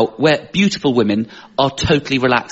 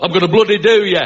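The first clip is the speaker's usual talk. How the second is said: aggressive, threatening, pitched-up Northern English accent; 6 semitones higher than usual. Comparing accents for sounding aggressive, speaker does an aggressive Northern accent. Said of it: "or like Northern accents".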